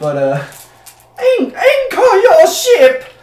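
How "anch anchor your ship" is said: very high, very loud, shrill, drawn-out scream. Playing the captain on the boat shouting an order, as a screaming ship captain. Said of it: "the captain is going to scream".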